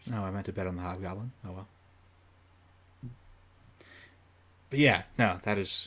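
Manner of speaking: very soft, very quiet, deflated, defeated, resigned tone. Realizing a missed bet, in a defeated tone. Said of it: "I can just hear the defeat in your voice".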